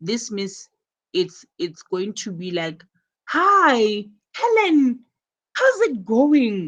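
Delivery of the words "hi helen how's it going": pleased, delighted, excited, drawn-out "hi". Showing learners how Jane greets Helen: excited, pleased greeting. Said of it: "she's excited".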